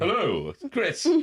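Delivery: very high, posh, put-on phone voice. Dad demonstrating the work voice his kids tease him about, in a posh work phone voice. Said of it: "you've got like a work voice".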